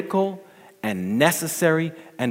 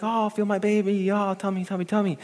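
high, giddy, thrilled, put-on gushing voice; 8 semitones higher, 3 dB quieter than usual. Acting out a wife coming up to her husband, imitating an excited wife. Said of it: "she's all excited. She's like".

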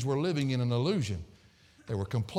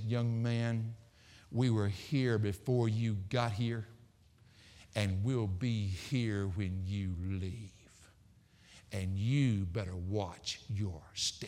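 put-on old woman's voice, slow and hushed. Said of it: "she looked at him and she said".

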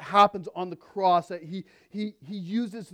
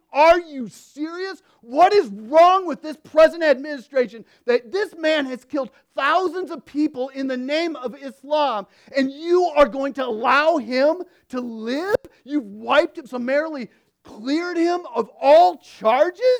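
mock infuriated outburst of disbelief, high and loud; 8 semitones higher, 6 dB louder than usual. Voicing how listeners would react to the administration freeing Abu; acting out infuriated outrage.

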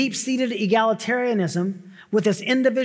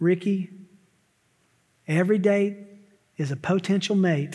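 put-on folksy Southern accent; 2 semitones lower than usual. Quoting what his mom used to say to him, the speaker uses a southern accent. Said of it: "in a southern accent".

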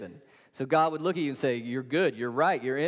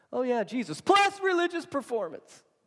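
mock shrill, high shout landing on the end; 10 semitones higher than usual. Acting out what they would say about jesus plus religious performance, retelling their yell at the end. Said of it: "And I'm yelling at the end because that's what they would emphasize".

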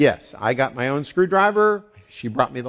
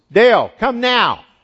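loud, raised, high-pitched, demanding call; 9 semitones higher, 8 dB louder than usual. Retelling the wife calling from upstairs: imitating Becky's tone of voice. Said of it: "That tone of voice".

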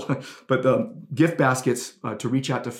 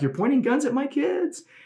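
very high-pitched, frantic scream; 13 semitones higher than usual. Retelling a woman from an article screaming at police, imitating a woman screaming. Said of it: "the gal is just like screaming".

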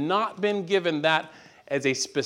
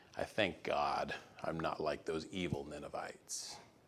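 put-on grumbling mutter, lower and quieter; 12 semitones lower, 14 dB quieter than usual. Voicing Jonah as he heads off to Nineveh: imitating Jonah grumbling under his breath. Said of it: "grumbling underneath his breath".

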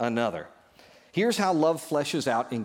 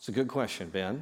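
normal talking voice

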